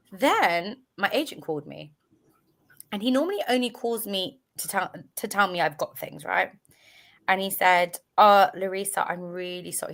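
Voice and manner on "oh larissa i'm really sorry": normal talking voice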